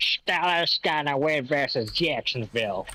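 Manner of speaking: fake, put-on Pittsburgh accent. Making a game pick in a put-on Pittsburgh accent. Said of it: "put on my, my Pittsburgh accent".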